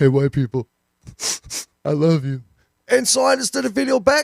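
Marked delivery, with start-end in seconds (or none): 0.0-2.4 weeping, tearful, crying voice. Retelling a video where a guy spoke through tears: imitating someone crying. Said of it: "tears coming".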